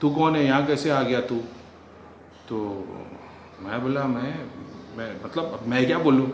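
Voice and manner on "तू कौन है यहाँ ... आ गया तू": ordinary talk, nothing marked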